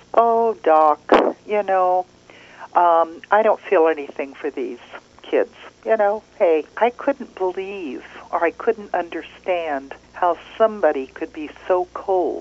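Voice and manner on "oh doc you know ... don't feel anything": usual speaking voice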